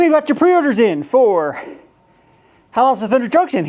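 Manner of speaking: catching breath while speaking. Speaker unboxing items on camera tells viewers about pre-orders, out of breath. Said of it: "Excuse me as I catch my breath here".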